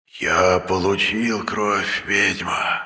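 sibilant, hissing serpent voice. A fire serpent addresses a witch in a loud hiss. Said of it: "Прошипел змей, да так громко".

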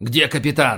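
ordinary delivery

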